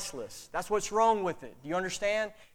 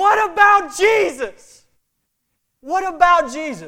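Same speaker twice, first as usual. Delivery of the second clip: very loud, high, booming, drawn-out scream; 9 semitones higher, 11 dB louder than usual. Telling how one man stood up in the Georgia Dome, retelling his loud scream. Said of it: "he screams as loud as he can".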